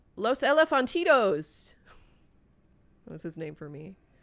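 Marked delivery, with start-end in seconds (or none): 0.2-1.7 put-on very loud, high chef accent. Retelling what the chef would call out: imitating the chef's accent. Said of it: "With that accent".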